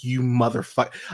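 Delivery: imitated furious, angry outburst. Retelling a reaction to a film scene: imitating own angry outburst. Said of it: "I was so mad".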